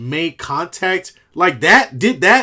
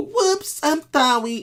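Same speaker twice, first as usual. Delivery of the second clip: put-on high, childlike little voice of a young kid; 8 semitones higher, 5 dB quieter than usual. Mocking a grown player by acting like a nine-year-old: imitating a nine-year-old. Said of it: "like a nine-year-old and go".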